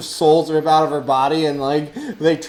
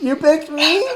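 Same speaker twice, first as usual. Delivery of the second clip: put-on very high, small little girl voice; 12 semitones higher than usual. Voicing a little girl peeking up from under the player's legs: little girl character. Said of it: "the little girl's face is, like, peeking up".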